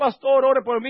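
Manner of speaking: high, loud, crying-out pleading voice. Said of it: "venir dando gritos".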